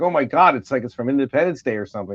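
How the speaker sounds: plain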